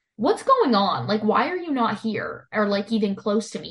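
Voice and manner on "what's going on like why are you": plain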